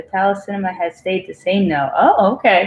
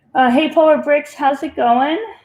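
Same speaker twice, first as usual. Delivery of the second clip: casual tone, voice cracking and pitched up; 6 semitones higher than usual. Speaker greets polar bricks, voice cracking. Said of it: "my voice is cracking".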